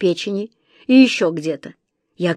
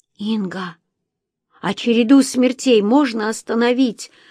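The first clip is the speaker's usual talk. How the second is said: trembling, quavering, shaking voice. A girl in a story asks a woman a question, in a trembling voice. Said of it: "дрожащим голосом спросила Лариса".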